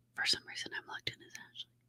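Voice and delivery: sheepish, very soft whisper.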